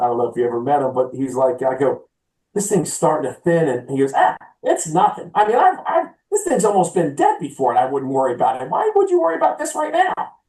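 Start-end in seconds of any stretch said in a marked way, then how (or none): 4.2-10.1 high, pitchy, sing-song voice, rising. Imitating the superintendent out at the green, in a high pitchy voice. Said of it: "he's got this high pitchy voice".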